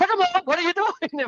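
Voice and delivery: stern, barked very high yelling. Retelling how a man yelled at them on a boat, imitating his yelling. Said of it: "he started yelling at us".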